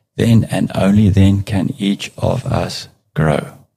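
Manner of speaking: ordinary delivery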